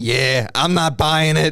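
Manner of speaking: slow, high-pitched New York guy voice. Retelling what a guy walking around New York says: imitating a New York guy. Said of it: "New York John Levy, where he's just walking around like".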